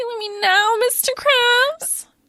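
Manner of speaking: very high, eerie moan. Quoting a cartoon character's line: imitating a weird moan. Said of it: "moans it kinda weird".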